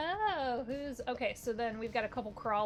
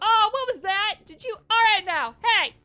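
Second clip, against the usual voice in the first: put-on character voice, higher and louder; 10 semitones higher, 14 dB louder than usual. Voicing Lucky after a part flies across the ship: voicing Lucky. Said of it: "you hear Lucky go".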